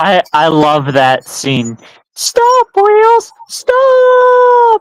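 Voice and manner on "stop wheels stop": very high cartoon engine voice, "stop" stretched out. Recalling a favourite scene from the show, in the Thomas voice. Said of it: "Your Thomas voice".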